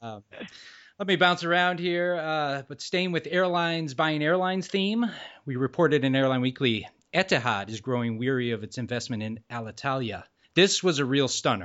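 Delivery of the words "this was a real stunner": faux-amazed, dry sarcastic tone. Reporting an airline investment news item, the speaker calls it a stunner, sarcastic. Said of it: "I might detect a little sarcasm there".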